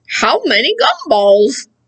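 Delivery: mock chewing, mouth full of gum. Showing learners a word while pretending to chew a big wad of gum. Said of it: "Like I'm chewing up those gumballs in there".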